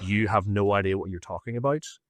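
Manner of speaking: put-on stony, cold voice. Retelling a reply to a jab about a dead brother: imitating a stony, cold voice. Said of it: "it wasn't a raised voice, but it was like".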